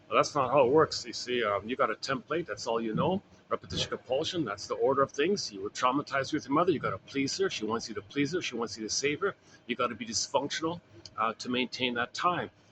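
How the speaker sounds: ordinary talk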